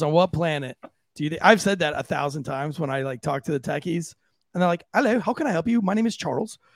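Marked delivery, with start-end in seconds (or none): 4.9-6.6 put-on British English accent with raised pitch. Imitating a tech support worker answering a call, english accent. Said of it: "that was an English accent".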